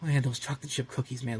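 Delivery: put-on deflated tone. Imitating a boy giving up on running away: imitating a deflated tone. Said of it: "getting so deflated by this idea".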